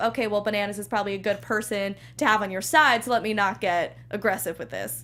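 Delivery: ordinary talk, nothing marked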